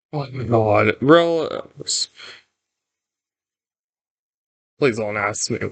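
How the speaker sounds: nervous, jittery voice. Reaching the last part of a level: nervous, heart racing, legs shaking. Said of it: "I can feel my legs shaking when I get to the last part".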